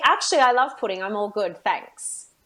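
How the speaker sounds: cheeky, direct, sassy, confident tone. Showing how she would answer someone's remark, in a sassy tone. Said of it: "in my sassy tone".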